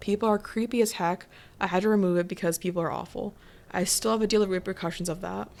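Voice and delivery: ordinary talk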